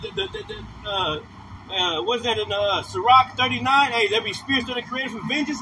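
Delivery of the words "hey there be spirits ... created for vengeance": ordinary talk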